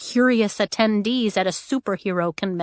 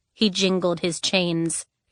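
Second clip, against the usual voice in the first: plain reading voice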